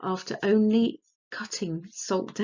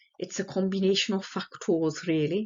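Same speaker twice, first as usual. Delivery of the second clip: terrible, poor put-on Welsh accent. Explaining asthma triggers, the speaker quotes a film's Welshman, terrible Welsh accent. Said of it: "pardon my terrible Welsh accent".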